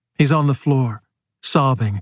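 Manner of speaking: plain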